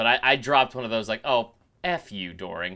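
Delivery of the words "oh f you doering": low, slow, affectionate, teasing joking tone. Speaker retells their own jab at Doering; retelling a joking jab. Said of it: "I think I jokingly said".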